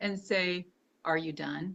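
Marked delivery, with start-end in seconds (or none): 1.0-1.7 voice drops very low, serious tone. Showing how to respond to a tantrum after looking away: voice gets real low. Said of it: "my voice would get real low".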